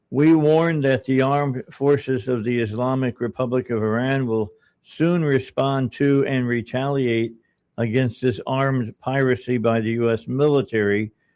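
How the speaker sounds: ordinary talk, nothing marked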